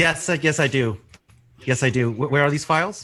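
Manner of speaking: high-pitched, shout-style delivery. Answering a request to come over and help go through files: shouting. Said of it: "Why are you shouting?".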